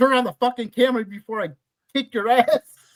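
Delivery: loud, furious, threatening yell. Retelling a movie scene where Gail yells at Kenny: imitating Gail yelling. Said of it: "She yells at Kenny".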